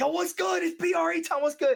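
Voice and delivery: pumped-up excited tone. Recalling a raid, the speaker demonstrates a hyped greeting like they do now. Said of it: "getting all hyped like I do now".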